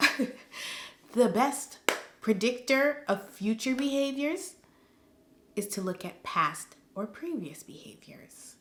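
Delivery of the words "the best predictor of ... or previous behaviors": hushed, soft whispering. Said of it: "like my therapist said".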